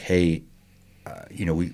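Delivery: ordinary talk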